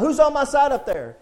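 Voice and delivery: high, loud holler with pitch flung upward. Preaching, retelling a story, imitating a man yelling out. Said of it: "So he's yelling out".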